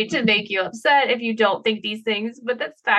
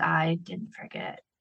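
eerie, very quiet, breathy creepy whisper; 4 semitones lower, 10 dB quieter than usual. Speaker repeating her own reply to a woman who won't forget, creepy voice. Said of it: "And I say it in the creepy voice".

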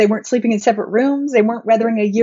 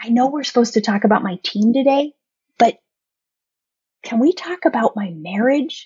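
put-on conspiratorial whispering voice. Retelling what coaching clients would ask in sessions: imitating a conspiratorial whisper. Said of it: "They'd kind of whisper and wince".

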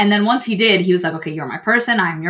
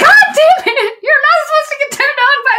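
mock angry yell, higher and louder; 6 dB louder than usual. Retelling a scene where a character gets mad: imitating an angry outburst. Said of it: "he gets mad and he's like".

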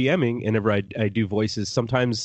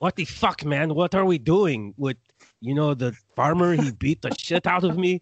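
comic talking goat character voice, pitched up; 6 semitones higher than usual. Describing a skit on a comedy CD, the speaker quotes the talking goat: The Goat voice. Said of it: "the goat talks kind of like this".

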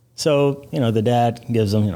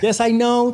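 put-on Spanish-accented English voice, higher pitch. Answering agency coworkers who ask how it would sound in Spanish: Sofia Vergara voice. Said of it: "I start doing the Sofia Vergara voice".

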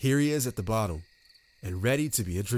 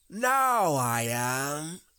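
growly voice, pitched up, with a good growl; 5 semitones higher than usual. Reading a story aloud, Winnie the Pooh answers in a growly voice. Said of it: "said a growly voice".

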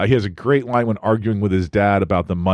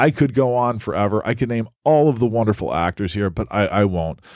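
usual speaking voice

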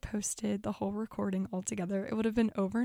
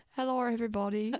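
playful, goofing, put-on British accent. Recalling goofing around on stage, greeting everyone in a put-on british accent. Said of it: "I was talking in a British accent".

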